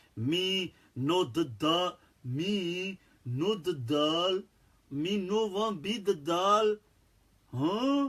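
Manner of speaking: very slow, dumbed-down caveman babble. Explaining how he simplified things for people who struggled to understand, caveman speak. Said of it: "dumb it down to like caveman speak".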